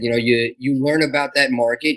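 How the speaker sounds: ordinary talk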